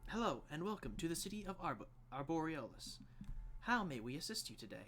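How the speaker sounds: automated, recorded-sounding machine voice. Voicing a stone sentinel greeting the party: automated voice. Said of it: "an automated voice say".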